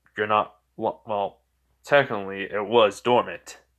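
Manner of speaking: ordinary delivery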